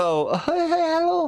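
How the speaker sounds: put-on very high woman's voice. Showing attempts at doing voices, the speaker tries a high-pitched woman's voice. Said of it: "I cannot make my voice any higher".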